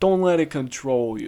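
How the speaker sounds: loose, sort-of Brooklyn New York accent. Advising a listener not to let fear control them, in a Brooklyn accent. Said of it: "It kind of sounded like a like a Brooklyn accent".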